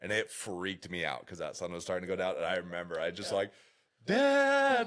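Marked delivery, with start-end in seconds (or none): 4.1-4.9 shrill, high, drawn-out tearful crying wail. Remembering being young and losing sight of their dad at sundown, retelling crying and yelling. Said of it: "like crying, yelling".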